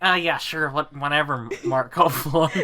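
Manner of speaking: exaggerated nasal put-on voice. Coaching another person's impression, showing how it should go: nasal Matt Watson impression. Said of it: "you need a lot more nasal in there".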